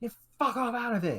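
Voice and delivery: furious, very high-pitched outburst. Voicing an NPC who is making a scene: angry NPC making a scene. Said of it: "she's making a bit of a scene at this point".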